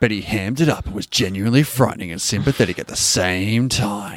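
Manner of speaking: dramatic, deep movie-trailer announcer voice. A host reviewing a movie talks in a movie trailer voiceover voice. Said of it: "You sound like a voiceover for a movie trailer".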